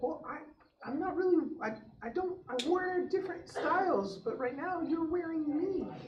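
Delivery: very high, squeaky talking glove voice. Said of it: "that was the high-pitched voice".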